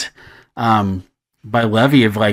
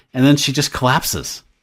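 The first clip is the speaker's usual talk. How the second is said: ordinary talk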